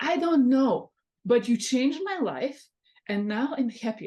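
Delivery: put-on Serbian accent.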